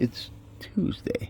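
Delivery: very quiet, hushed, breathy, condescending whisper. Retelling what their daughter said when she chimed in: mock-condescending tone. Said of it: "with that fucking condescending tone".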